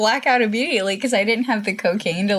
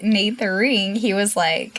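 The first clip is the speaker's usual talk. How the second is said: normal talking voice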